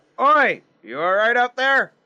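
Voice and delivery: high-pitched, rising, called-out shout. Grimnir spots a figure walking in the distance and calls to it, shouting out. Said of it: "Grimnir shouts out".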